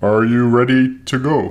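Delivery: robotic, machine-like voice. Asking someone whether they're ready to go, in a robotic-sounding voice. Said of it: "Is that a robot voice or is that a person?".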